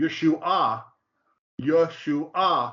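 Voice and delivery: Yeshua with stress on the third, final syllable. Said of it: "accent on the third syllable".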